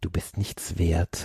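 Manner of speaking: slow, low, scornful whisper.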